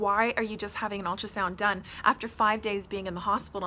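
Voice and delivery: normal talking voice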